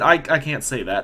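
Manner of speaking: ordinary talk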